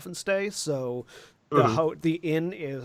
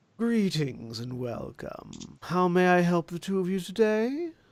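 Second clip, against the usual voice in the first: put-on very husky, raspy voice of an older woman; 3 semitones higher than usual. Narrator voicing an older lady who steps up to greet two visitors, very husky voice. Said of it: "with a very husky voice".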